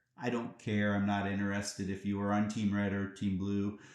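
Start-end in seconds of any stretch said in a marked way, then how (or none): none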